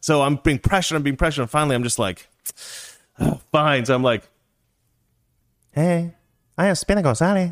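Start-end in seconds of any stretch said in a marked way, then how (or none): 5.7-7.5 put-on cartoon Mexican accent, high, slow, drawn out. Pressured by everyone at the table, finally doing the Speedy Gonzalez accent. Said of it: "do the Speedy Gonzalez accent".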